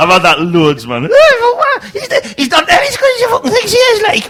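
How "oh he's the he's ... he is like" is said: mocking dumb-sounding squeaky voice, higher. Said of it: "in a stupid, squeaky fucking voice".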